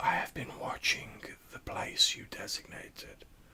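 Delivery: whispered, hissing ghost voice. Game narrator voicing a bound spectre reporting back; whispered hissing spectre voice. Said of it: "whispered, hissing voice of the spectre saying".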